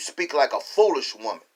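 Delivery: ordinary talk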